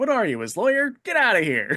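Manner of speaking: rapid-fire, very loud, very high, shrill. Quoting a funny movie character's line, fast J. Jonah line delivery. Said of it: "Just like that fast".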